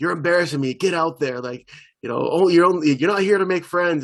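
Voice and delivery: put-on cruel, harsh, mean dad voice, drawn-out "you're". Retelling how he played a little girl's father, acting out super mean parent. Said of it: "he had to be like super mean".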